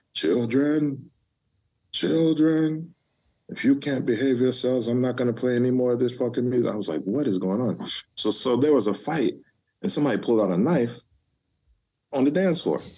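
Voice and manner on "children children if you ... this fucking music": mock, big announcer-style DJ voice. Retelling a club night, voicing whoever stopped the music: imitating a booming voice. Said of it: "this big ass booming voice comes".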